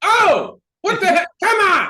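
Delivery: shrill, very loud, drawn-out exasperated yell. Retelling reacting to a game on tv: imitating yelling at the tv. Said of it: "when something happens ... I go".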